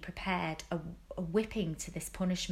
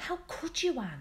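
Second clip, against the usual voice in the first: breathed, higher, half reproachful, half admiring; 8 semitones higher than usual. Narrator reading a novel, Diana to Anne as they walk down the road: breathed, half reproachfully. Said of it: "breathed Diana".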